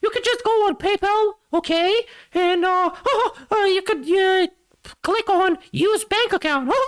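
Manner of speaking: very high, squeaky, slow and drawn out. Retelling what a man said about PayPal, in a Mickey Mouse voice. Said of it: "I'm gonna put the Mickey Mouse voice for this".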